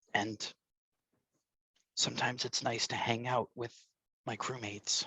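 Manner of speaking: hushed, low, confiding, under the breath. Voicing a character confiding to a crewmate: low and conspiratorial. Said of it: "kinda low and conspiratorially".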